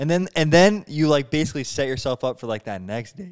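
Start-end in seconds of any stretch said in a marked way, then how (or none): 2.6-3.3 voice cracks, pitch breaking on next. Talking about dating with others, voice cracking mid-word. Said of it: "My voice cracked".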